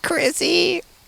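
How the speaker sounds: very high, tiny ghostly woman's voice. Admitting to making the ghost voice on a recording, little woman voice. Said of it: "I did the little woman voice".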